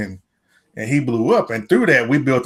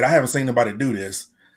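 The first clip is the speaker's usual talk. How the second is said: ordinary talk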